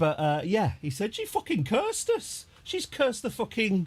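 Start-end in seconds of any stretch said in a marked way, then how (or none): 1.1-3.9 put-on Birmingham accent, pitched very high. Retelling what he said after she cursed their flight, in a Birmingham accent. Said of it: "that's my Birmingham accent".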